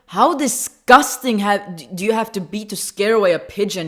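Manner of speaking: really loud mock tone. Retelling what she said to a man who scared off a pigeon, reenacting saying it loudly. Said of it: "I just like really loudly I was like".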